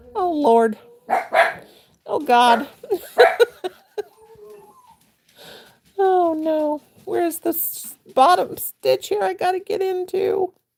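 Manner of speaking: high, slow words through helpless laughter. Crocheting a baby's crotch and laughing hard while talking. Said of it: "I'm laughing so hard I'm shaking all over".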